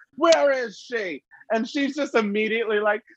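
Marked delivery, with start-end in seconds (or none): 0.2-1.2 high-pitched, angry voice. Retelling a movie scene where a man storms in: imitating a man storming in. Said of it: "the guy just storms in, and he's like".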